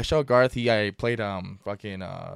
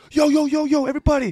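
put-on scream, higher and louder; 8 dB louder than usual. Retelling how a friend walked in and called out: imitating someone screaming. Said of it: "He walked in there just screaming".

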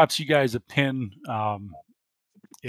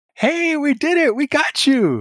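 very high, loud, chipper voice. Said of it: "Kirsten's all like".

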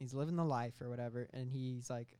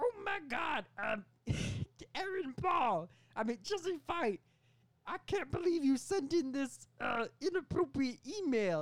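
bad put-on New York accent, higher and louder; 13 semitones higher, 4 dB louder than usual. Acting out a made-up movie scene as the boss: Tom Hardy's Venom voice. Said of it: "he's doing the same voice from Venom".

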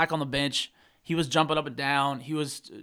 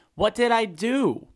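play-acted very slow, high, stretched-out protesting yell; 6 semitones higher, 3 dB louder than usual. Retelling what a player yelled from the bench: imitating someone yelling. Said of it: "you can see him yelling".

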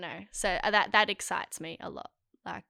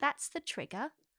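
attempted Irish accent, soft and high; 6 semitones higher, 5 dB quieter than usual. Trying out an Irish accent while others judge it, Irish-sounding accent. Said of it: "That sounds Irish".

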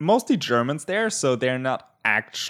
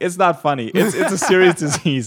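talking through laughter, pitched up; 6 semitones higher, 6 dB louder than usual. Reporting rising case numbers on an island: laughing while talking. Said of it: "Why am I laughing?".

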